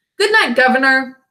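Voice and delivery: cheerful, cheery call-out. A rider passing a long cab stand calls out to someone, in a cheery voice. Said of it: "called out in a cheery voice".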